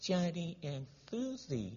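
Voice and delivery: quietest, very hushed storyteller voice. Retelling how she began the story for the class, very quiet voice. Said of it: "sit down with the quietest voice".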